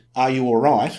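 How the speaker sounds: ordinary talk, nothing marked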